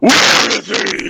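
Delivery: put-on gravelly superhero voice.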